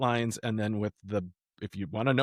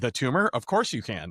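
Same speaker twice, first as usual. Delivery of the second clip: plain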